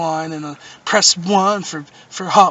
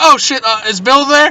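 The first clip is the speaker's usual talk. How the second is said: high, loud, mock flustered, freaked-out panicked blurt; 7 semitones higher, 6 dB louder than usual. Retelling being caught listening on the line, retelling own freaked-out panic. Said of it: "I freaked out".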